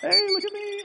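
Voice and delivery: very high killdeer bird voice. Narrating a killdeer's broken-wing ruse, doing your best killdeer impression. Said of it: "That's my best killdeer impression".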